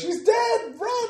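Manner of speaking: very high-pitched, very loud scream. Playing a character who sees a monster attack: screaming out a warning. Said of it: "I'm gonna scream out".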